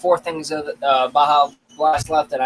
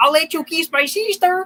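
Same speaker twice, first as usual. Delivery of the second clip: put-on toad voice, higher pitch. Imitating that one Toad guy from Rango: Toad guy from Rango voice. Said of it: "that one freaking Toad guy from Rango".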